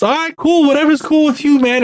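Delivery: very high, bubbly, jolly, too-happy tone. Retelling what a man said about getting in the car, imitating a jolly voice. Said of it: "he had like this really jolly voice".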